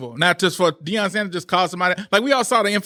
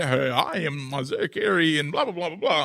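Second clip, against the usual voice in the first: put-on formal newscaster voice, quieter; 2 semitones lower, 4 dB quieter than usual. Retelling how he spoke in the news interview: imitating Isaiah Carey's news voice. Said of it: "but he went".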